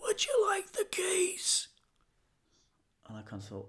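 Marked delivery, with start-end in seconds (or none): 0.0-1.7 put-on very high, strange, bizarre old man's voice. Retelling an elderly stranger offering the keys, imitating his bizarre voice. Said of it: "had this very bizarre voice".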